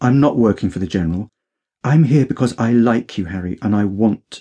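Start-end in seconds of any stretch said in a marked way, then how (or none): none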